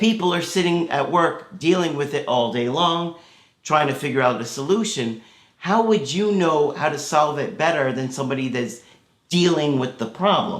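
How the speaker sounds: ordinary talk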